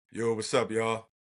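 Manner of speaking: put-on deep voice. Retelling a story, speaker imitates Carrie greeting them at the door in a deep voice. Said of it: "deep ass voice".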